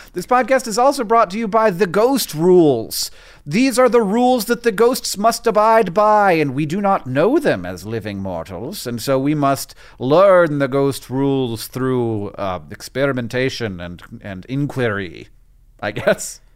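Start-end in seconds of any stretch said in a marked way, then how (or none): 0.1-15.2 faint put-on British accent, sing-song. Announcing on a podcast who it is brought to you by, close to a fake British accent. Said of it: "dangerously close to your fake British accent".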